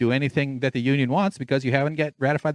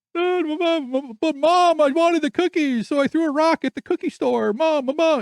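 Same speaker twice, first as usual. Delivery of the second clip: very high, slow, drawn-out, pleading spoiled-brat voice; 4 dB louder than usual. The speaker mocks a man by imitating him: mocking as a spoiled kid. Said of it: "he just sounds like a like a like a spoiled kid".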